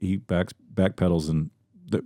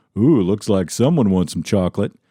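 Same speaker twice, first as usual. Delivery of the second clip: put-on sassy assistant voice; 4 dB louder than usual. Retelling what the voice assistant says: imitating Alexa with attitude. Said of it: "And she goes".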